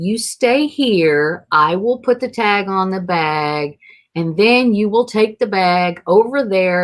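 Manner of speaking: slow, clear, deliberate speech, word bag drawn out. Retelling a gate agent's instructions, imitating someone speaking slowly and clearly. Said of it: "She just spoke really slow and really clearly".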